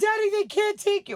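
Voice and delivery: very high, loud, hysterical pleading tone. Retelling what she said to her father during his arrest, acting out being hysterical. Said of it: "I was like hysterical".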